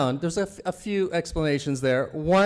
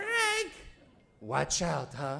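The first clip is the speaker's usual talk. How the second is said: put-on Italian mother voice; 9 dB quieter than usual. Retelling his mom's advice about women, imitating his Italian mom. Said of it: "that's how she talks".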